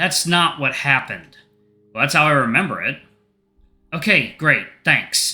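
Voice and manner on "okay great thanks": upset-sounding voice. Answering a father who denies kicking them out: sounding upset. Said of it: "You sound upset".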